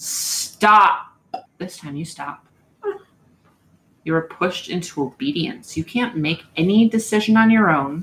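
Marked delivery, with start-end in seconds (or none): 0.0-1.1 huge, booming, commanding giant voice. Game master voicing a character who confronts the players: big booming voice. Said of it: "in his big booming voice once again says".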